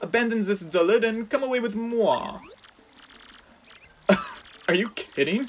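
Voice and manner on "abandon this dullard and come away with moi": bad, fake French accent, pitched up. Voicing a character's line aloud, in a bad french accent. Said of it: "I also can't do French accents".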